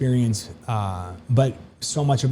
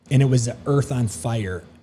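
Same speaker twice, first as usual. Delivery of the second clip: ordinary talk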